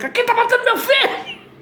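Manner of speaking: mock very high, shrill yelling cry. Recounting shouting at a possessed woman, the speaker imitates his father yelling. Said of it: "meu pai gritando".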